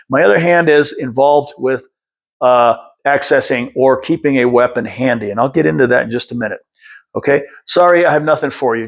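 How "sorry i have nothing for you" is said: calm, plain, matter-of-fact, neither fearful nor challenging tone. Showing how a line should sound, not fearful, not challenging: calm, matter-of-fact. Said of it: "Just like that. Not in a fearful way, not in a challenging way, but just in a matter of fact".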